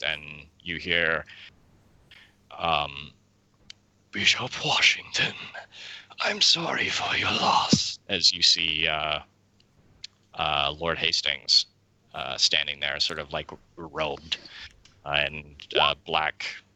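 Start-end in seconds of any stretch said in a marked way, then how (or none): 4.1-8.0 raspy, echoey, eerie ghostly voice. Narrating a scene and voicing Lord Hastings: raspy echoey voice. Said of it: "a raspy echoey voice".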